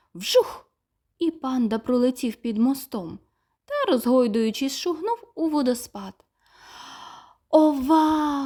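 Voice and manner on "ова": exclaiming, crying out, higher and louder. Narrator voicing Tim the little mouse as the panda flies past: exclaiming. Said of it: "вигукнув Тім".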